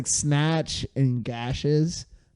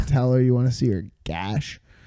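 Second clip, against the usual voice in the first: ordinary talk, nothing marked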